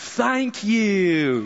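high, mocking Tennessee drawl with long stretched sounds. Bending over and thanking someone, in a mocking Tennessee accent. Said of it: "in a mocking Tennessee accent, I bent over and I said, ... just like that".

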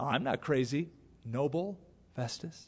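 calm, gracious tone. Retelling how a man answered festus's insult: retelling a calm reply. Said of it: "Isn't that a gracious way to respond".

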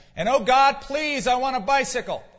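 high, loud yelling, directed upward. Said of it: "You don't have to yell".

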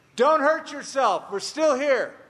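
high, loud yelled call. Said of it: "he yells out".

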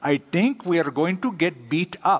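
put-on gentle, sweet Indian English accent. Retelling what Ravinder said to him: Ravinder's Indian accent. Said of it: "in that sweet Indian accent, ... I'm going to probably butcher it".

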